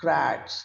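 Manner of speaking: congrats with con stressed, grats dropping low. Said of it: "this syllable, we are laying emphasis".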